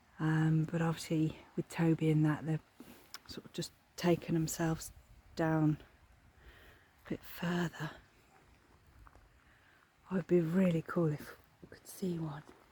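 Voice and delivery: hushed whisper. Looking at a fenced-off area where deer might be: whispering. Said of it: "I'm whispering now".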